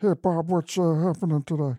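high cartoon side-character voice. Showing the others a voice for a Bob's Burgers side character. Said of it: "I do that guy".

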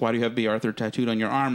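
plain

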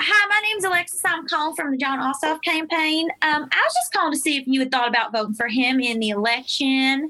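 put-on Southern accent. Showing how she talks on campaign phone calls, in a put-on southern accent. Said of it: "I do a Southern accent when I call".

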